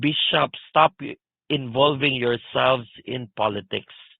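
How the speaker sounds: ordinary talk, nothing marked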